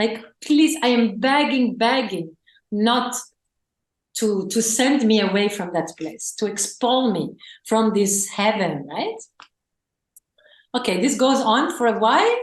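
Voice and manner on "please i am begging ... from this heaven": normal talking voice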